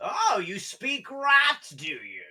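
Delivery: very high voice swinging widely in pitch. Voicing the Rat King as he greets the players, in a Tim Curry-type voice. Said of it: "a Tim Curry type of voice".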